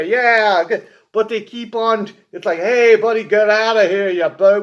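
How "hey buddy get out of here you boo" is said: put-on loud mobster wise-guy accent drifting into Australian accent. Describing an eighties action movie, the speaker imitates its mobsters, wise-guy accent slipping Australian. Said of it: "slowly start veering back into their Australian accent".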